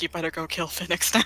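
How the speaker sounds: toneless, soft, faint half-whisper. Voicing a departing figure who half-whispers to a player: half-whispering. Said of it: "You just hear a whisper like".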